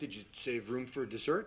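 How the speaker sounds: put-on placid, calm, slightly awkward and uncomfortable manner. Retelling the dad's offer of dessert: imitating a calm, almost uncomfortable manner. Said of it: "In his calm, almost uncomfortable demeanor".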